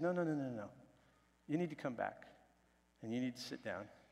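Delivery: soft, very gentle, very calm voice. Retelling how the leader stopped a man storming out: gentle, calm voice. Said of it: "so gently and so calmly".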